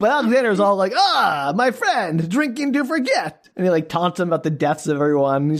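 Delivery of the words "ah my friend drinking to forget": slow, bad, cheesy Russian accent, pitched up. Recounting a scene, voicing Alexander taunting another character, terrible Russian accent as Alexander. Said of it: "forgive my terrible Russian accent".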